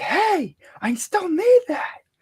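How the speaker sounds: very high, loud yelling. Playing a character at a slammed door, calling to the man inside; yelling at him. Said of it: "I'm gonna just start yelling at him like".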